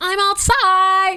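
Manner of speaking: very high-pitched put-on young schoolgirl voice.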